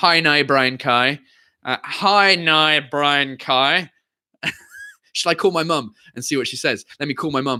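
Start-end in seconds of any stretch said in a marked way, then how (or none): 0.0-3.9 put-on Northern Irish accent. Speaker showing how their mum says a phrase, northern irish accent. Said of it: "with a Northern Irish accent".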